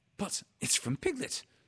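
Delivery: very high-pitched called-out sound. Christopher Robin reads the message Bear brought him; crying out. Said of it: "cried Christopher Robin".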